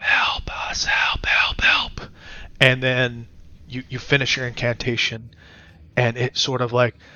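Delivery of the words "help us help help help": ghostly whispered pleas, slow and drawn-out. Describing the incantation, the speaker voices the others calling for help: whispering. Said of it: "they're just sort of whispering".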